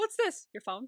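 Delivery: soft, dead-serious, with no hesitation. Speaker quotes a character's straight-faced joke from an episode, mock-serious deadpan delivery. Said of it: "just like it's so serious".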